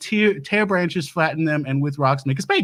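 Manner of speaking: ordinary talk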